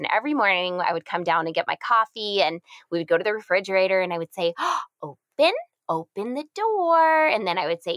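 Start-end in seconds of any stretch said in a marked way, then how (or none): 4.6-7.3 put-on very slow, very high sing-song baby talk. Retelling mornings at the fridge, talking with her in a parentese voice. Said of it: "using that parent ease voice".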